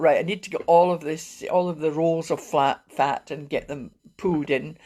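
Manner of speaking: plain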